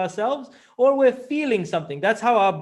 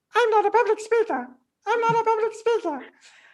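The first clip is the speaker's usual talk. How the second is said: very high, squeaky cartoon voice. Advice for practising public speaking: say it in a Mickey Mouse voice. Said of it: "in a Mickey Mouse voice".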